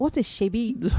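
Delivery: imitated British accent. Retelling a grandfather correcting the kids' slang: imitating grandfather's British accent. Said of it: "Londoners with very great British accents".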